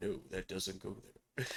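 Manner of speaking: put-on fussy man's voice, deep, low and soft. Imitating a very sweet, fastidious guy, impression of his voice. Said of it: "I'm trying to do his voice. He's got a, you know, sounds like Johnny Depp".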